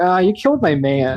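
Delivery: put-on slow, drawn-out valley girl drawl. Acting out a character's line while recapping a scene: valley girl voice. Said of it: "I'm just imagining her as, like, a valley girl".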